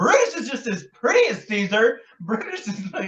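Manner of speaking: put-on high-pitched Valley Girl accent with gushing, chattering delivery. Quoting a film character reading Shakespeare: imitating a Valley Girl accent. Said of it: "a Valley Girl accent".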